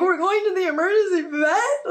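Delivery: put-on, high, frantic, hysterical sobbing. Retelling calling dad about going to the emergency vet: imitating crying hysterically. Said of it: "I'm crying hysterically".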